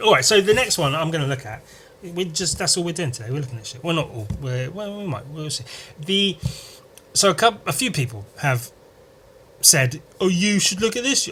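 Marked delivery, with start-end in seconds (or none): 10.2-11.3 mocking voice, pitched up. Quoting what a few people told him, the speaker mimics them in a mocking imitation. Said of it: "I don't know why I do it in a mocking tone".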